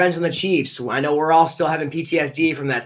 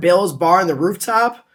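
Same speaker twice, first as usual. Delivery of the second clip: ordinary delivery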